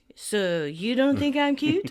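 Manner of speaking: mumbling. Retelling what a man said back to Rachel: imitating a mumble. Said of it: "And he mumbles".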